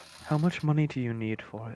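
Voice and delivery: whispering. A player's character leaning in, whispering to Ellem in Elvish. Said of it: "whisper in Elvish".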